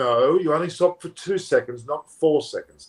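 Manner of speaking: ordinary talk, nothing marked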